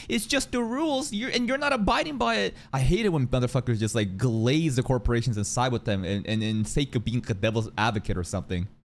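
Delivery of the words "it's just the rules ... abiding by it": high, mocking rules-lawyer voice. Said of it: "to be like".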